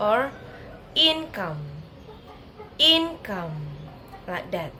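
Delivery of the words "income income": income with heavy stress on first syllable IN. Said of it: "say the first syllable is strongly".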